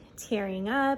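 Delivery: normal talking voice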